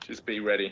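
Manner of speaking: soft whispering. Warning a companion in character after spotting something in an alley: whispering in character. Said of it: "I whisper to Ash and I say".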